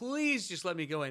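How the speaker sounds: mock earnest, high-pitched, pleading, begging tone. Retelling being left in the car as a child: imitating own childhood begging. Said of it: "I would beg".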